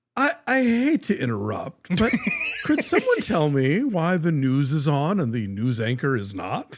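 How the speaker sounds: butter-wouldn't-melt innocent voice, swooping and lilting. Retelling a scene's delivery by the actor, Ed Asner butter-wouldn't-melt voice. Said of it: "in the butter wouldn't melt in his mouth voice".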